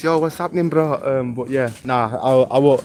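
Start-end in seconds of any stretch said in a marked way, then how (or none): 0.0-0.9 exaggerated, caricatured Bradford accent. Answering chat about his accent, putting on a stereotyped accent. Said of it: "Do you want me to sound like this?".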